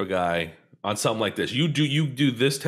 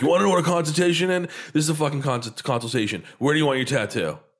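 mock-irritated, acted angry tone; 5 semitones higher than usual. Retelling how a tattoo guy answered a request for a consultation, imitating a pissed-off guy. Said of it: "Now he's all pissed off about a consultation".

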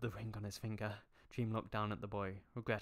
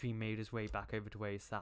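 ordinary delivery

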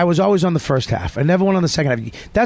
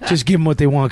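ordinary delivery

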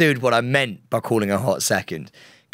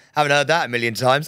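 usual speaking voice

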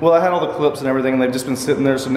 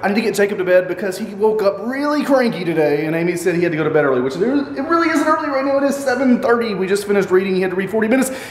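rushed, fast, racing, pitched-up rattle; 5 semitones higher than usual. Vlogging while hurrying to get Jacob to bed, the speaker is talking fast. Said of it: "I am talking so fast".

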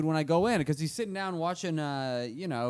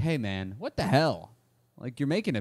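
plain

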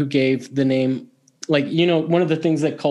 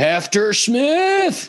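very high, swooping drill-sergeant bark; 9 semitones higher than usual. Imagining a drill sergeant calling out a name, barked like a drill sergeant. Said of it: "a drill sergeant in some like McHale's Navy type show going".

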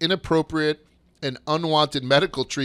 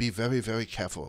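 put-on Chinese accent on every word; 5 semitones lower, 9 dB quieter than usual. Retelling what a commentator said back to an announcer: put-on chinese accent. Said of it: "like he did in a Chinese accent".

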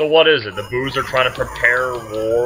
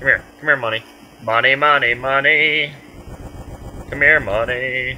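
creepy-sounding voice. Player calling to in-game money, in a creepy voice. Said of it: "That's creepy, I know, I'm talking like a".

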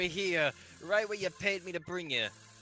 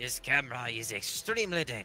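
very low, put-on attempted German accent; 7 semitones lower, 3 dB quieter than usual. Playing a game, voicing the Professor character with an attempted German accent. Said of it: "what are you up to now, Professor? ... I feel like he has a German accent in the movie, but I can't remember. Anyway. Oh, yeah, he's German, because he's... Yes, this is speaks German. Anyways. Oh, a TV camera. What does it actually do? This camera is".

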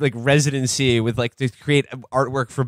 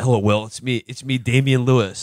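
put-on American accent. Damian Lewis greets Will and introduces himself, talking in an American accent. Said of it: "I'm talking in an American accent".

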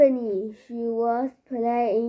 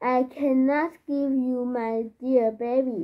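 ordinary talk, nothing marked

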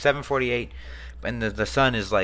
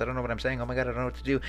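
rushed, much faster pace; 4 dB quieter than usual. Streamer narrating while playing, talking really fast. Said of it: "I'm talking really fast".

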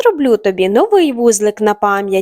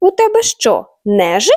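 alarmed, startled, flustered and worried; 4 semitones higher than usual. Narrator reads the father elephant questioning his son, alarmed. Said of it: "сполошився тато".

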